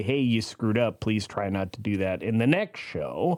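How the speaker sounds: normal talking voice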